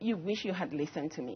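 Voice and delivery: heavy, very sarcastic told-you-so tone. Retelling a reply to parents who called during lockdown: retelling own sarcastic remark. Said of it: "in a very sarcastic way".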